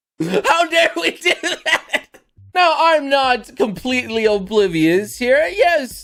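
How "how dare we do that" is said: laughing through the words, pitched up. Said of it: "I'm laughing".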